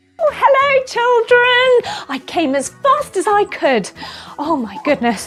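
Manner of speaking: panting, out of breath. A puppet character arriving to greet the children, acting out of breath. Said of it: "I am a little bit out of breath".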